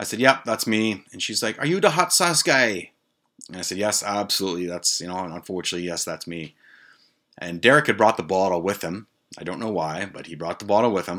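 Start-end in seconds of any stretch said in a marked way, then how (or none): 1.6-2.9 bad fake Jamaican accent, pitched way up. Retelling a hospital visit, quoting a nurse in a bad Jamaican accent. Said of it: "I know it's a shitty Jamaican accent".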